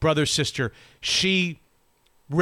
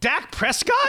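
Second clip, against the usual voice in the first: very high-pitched voice full of disbelief; 10 semitones higher than usual. Discussing Aaron Rodgers and Dak Prescott, the speaker slips into an Allen Iverson voice. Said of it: "Like in my Allen Iverson voice".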